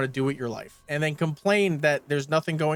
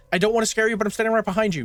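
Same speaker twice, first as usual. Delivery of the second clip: fast, high-pitched words tumbling out, rattled off; 6 semitones higher, 3 dB louder than usual. Retelling a scare scene where Luke startles Claire: saying it really fast. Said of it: "saying really fast".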